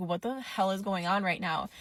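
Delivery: plain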